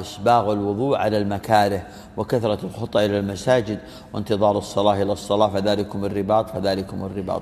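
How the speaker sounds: ordinary delivery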